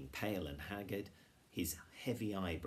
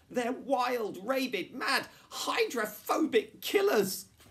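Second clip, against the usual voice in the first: shrill, very loud, high-pitched shouting; 14 dB louder than usual. In a read story, a character keeps yelling about the dogs: yelled. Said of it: "yelled Jonathan".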